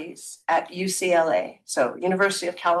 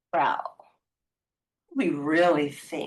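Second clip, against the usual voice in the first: imitated conspiratorial tone; 3 semitones lower than usual. Retelling a professor speaking to the class: imitating a conspiratorial tone. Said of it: "in almost a conspiratorial tone".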